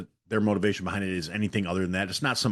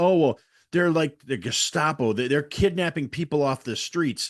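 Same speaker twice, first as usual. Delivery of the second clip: high, screeching, screaming, alarmist outcry; 7 semitones higher than usual. Mocking leftists who fear-monger: imitating people screaming. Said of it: "fear-mongering and screaming".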